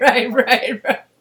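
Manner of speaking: speaking while laughing. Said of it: "I'm laughing".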